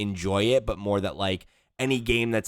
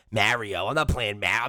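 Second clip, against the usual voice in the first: hard, put-on New Jersey Italian accent. Repeating a word just said by accident in an accent: hard new jersey italian accent. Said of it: "I hit that with like the hard New Jersey Italian accent".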